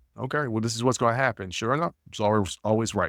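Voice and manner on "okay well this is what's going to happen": ordinary delivery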